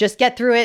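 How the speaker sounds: ordinary delivery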